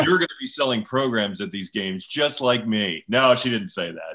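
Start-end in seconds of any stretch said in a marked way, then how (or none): none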